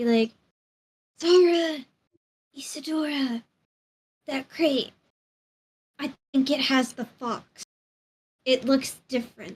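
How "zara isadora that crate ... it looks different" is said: whispering. In a role-play, signalling Zara and Isadora about a crate, whispering. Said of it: "So I'm I'm just gonna whisper".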